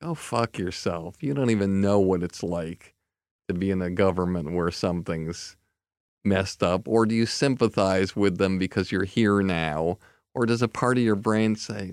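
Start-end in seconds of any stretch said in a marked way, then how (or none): none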